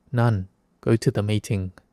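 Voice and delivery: ordinary talk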